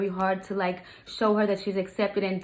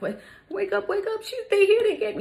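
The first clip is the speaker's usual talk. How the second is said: put-on crying child voice, very high-pitched, tearful and pleading; 13 semitones higher than usual. Retelling how the stepdaughter woke her up: imitating a crying child. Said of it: "She's crying profusely".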